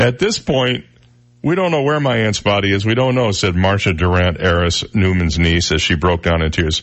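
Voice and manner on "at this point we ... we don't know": ordinary delivery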